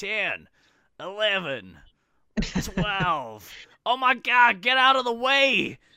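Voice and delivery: put-on very high, very loud, shrill American accent. Retelling a player counting his hits in a row, imitating Beans, American accent. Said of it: "I adore your American accent there".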